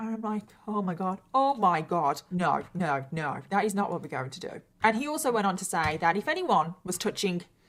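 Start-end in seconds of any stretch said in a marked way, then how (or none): none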